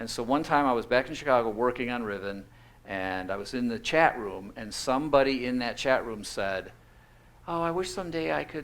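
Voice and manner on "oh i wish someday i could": imitated kid's voice, pitched higher. Retelling a chat room message from someone: imitating a kid's voice. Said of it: "I shouldn't use that voice".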